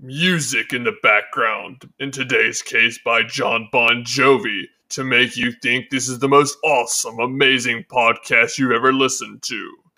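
mock, put-on, extremely deep voice. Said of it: "spoken in an extremely deep voice".

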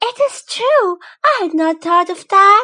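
joyful cry, high pitched and very loud. The narrator reads the wife's reply to her husband's suggestion, crying out with joy. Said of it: "She was a pretty charming young lady, born as if through an error of fate into a family of office workers. The sight of her husband, a petty clerk in the Board of Education, awakened in her sad regret".

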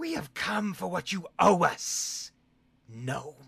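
high, ringing, echoing otherworldly creature voice. Voicing a creature speaking to a player's character: echoing otherworldly voice. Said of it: "You're echoing from the ethereal plane".

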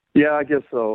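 beaten-down, resigned, defeated, dejected tone. Asked if he's ready to get her on the phone, answering defeated. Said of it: "you sound so defeated".

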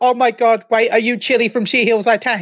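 plain

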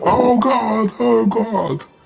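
very high, shrill, slow, drawn-out, desperate panicked scream. Narrating a British man in a crashing plane: acting out a scream. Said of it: "E ele fica gritando".

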